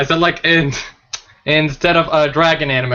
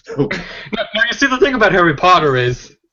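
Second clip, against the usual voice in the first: rough, clumsy put-on character voice, pitched higher; 5 semitones higher than usual. Doing a not-so-good impression of Blue Dragon for the others: Blue Dragon impression. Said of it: "probably not the best impression".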